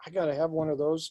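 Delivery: ordinary talk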